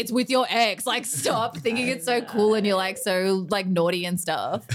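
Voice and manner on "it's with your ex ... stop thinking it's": ordinary delivery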